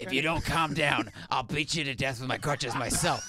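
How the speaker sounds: yelling, but kept mild. Retelling a man on crutches yelling at fighting airport workers: Lieutenant Dan voice yelling. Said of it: "yells at them with, like, Lieutenant Dan's voice".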